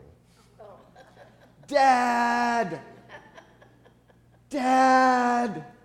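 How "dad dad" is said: high, loud, desperate hollering. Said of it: "And I started hollering".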